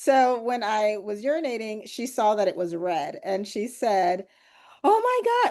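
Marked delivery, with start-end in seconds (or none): 4.8-5.5 mock very high, loud, blurting child's cry. Retelling a small child's question in a bathroom: imitating a very loud child. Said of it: "really loud".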